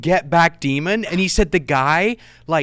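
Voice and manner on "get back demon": screaming at full force, repeated. Retelling how a friend faced a charging man, imitating someone screaming. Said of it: "he just kept screaming".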